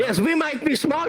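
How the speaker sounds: high-pitched, proud yelling.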